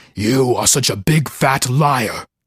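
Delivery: deep, slow, low growling rumble. Lying in the dark, the narrator hears a voice from under the bed: deep, low, growly voice. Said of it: "deep, low, growly voice rumble".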